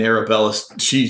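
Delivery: ordinary talk, nothing marked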